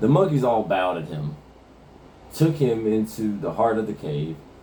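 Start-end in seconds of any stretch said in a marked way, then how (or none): none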